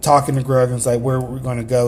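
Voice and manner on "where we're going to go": ordinary delivery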